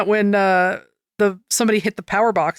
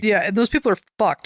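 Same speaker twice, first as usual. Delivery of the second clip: plain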